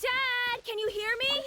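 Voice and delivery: loud yelling, screaming. Calling out to Dad during a search: screaming. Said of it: "Why are you screaming like that?".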